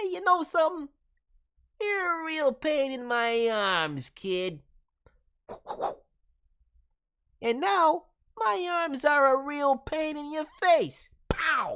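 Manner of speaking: very high, loud cartoon voice. Trying out a possible voice for a boxer character: Rattrap voice. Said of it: "Possible voice would be like, uh, Rat Trap from, uh, Beast Wars Transformers".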